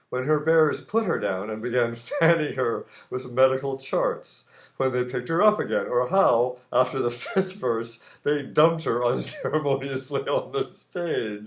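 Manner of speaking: giggling, laughing through the words. Reading their own written story aloud, the speaker is laughing while reading. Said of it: "I'm laughing at my own stuff".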